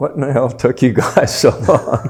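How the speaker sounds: mock joyful, delighted, overjoyed voice, high and loud. Retelling a corporal's greeting on the road near the front: imitating a happy voice. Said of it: "it was the happiest voice I've ever heard".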